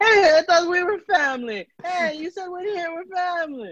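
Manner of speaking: put-on Italian accent, voice very high. Retelling what they said at that point, in a put-on italian accent. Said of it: "I go into my Italian accent at that point".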